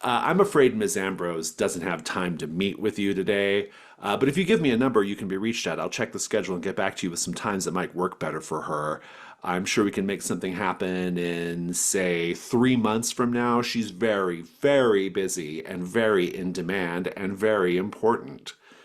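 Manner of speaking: ordinary talk, nothing marked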